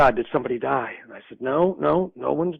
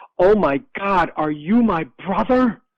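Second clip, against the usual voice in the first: mock high, loud, drawn-out scream; 5 semitones higher, 5 dB louder than usual. Retelling how a sister screamed into the phone: imitating someone screaming. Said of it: "she screamed into the phone".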